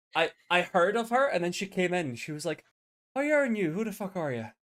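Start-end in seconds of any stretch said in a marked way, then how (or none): 3.1-4.4 put-on Irish woman's voice and accent. Retelling first meeting Mary as she came in, imitating Irish Mary. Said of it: "Irish Mary or Mad Mary".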